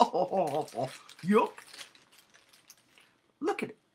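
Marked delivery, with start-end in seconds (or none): 0.0-1.5 goofy cartoon dog character voice. Showing off a small figure and explaining how the dog talks, in a Goofy voice. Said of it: "he talks like this".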